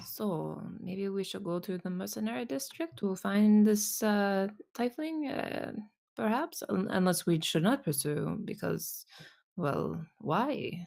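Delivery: offhand, halting, casual and hesitant delivery. Playing a character acting natural, talking to a passerby, in a quiet voice. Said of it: "in a in a quiet voice".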